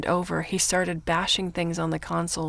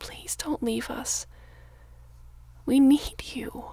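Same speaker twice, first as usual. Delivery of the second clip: put-on wheedling whisper in a childlike, begging tone; 8 semitones higher than usual. Brooklyn speaks to Donna, sounding like a child. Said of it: "She sounded like a child".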